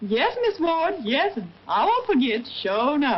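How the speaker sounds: put-on slow, drawling American Southern accent. Showing someone posing as a maid named Caroline how to answer, in a southern drawl. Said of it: "what did I tell you about that southern drawl".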